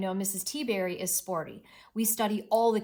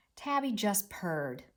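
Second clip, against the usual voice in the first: usual speaking voice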